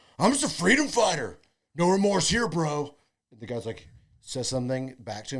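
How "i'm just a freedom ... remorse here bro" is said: put-on drunk voice, raised, high, taunting. Acting out a line a drunk guy says before a bar fight: imitating a drunk guy picking a fight. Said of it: "something a drunk guy would say".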